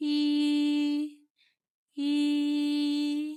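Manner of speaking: "hi" held on a flat, high, level tone. Teacher explaining tones, first tone does not move: high level first tone on hi. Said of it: "مع النغمة الأولى ... ما بتتحركش".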